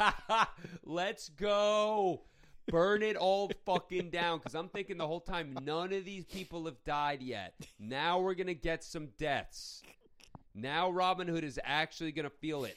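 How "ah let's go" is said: imitated loud laughing, higher and louder. Retelling cheering for the Celts in a film scene: imitating own loud laughing. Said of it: "I'm laughing at the top of my lungs".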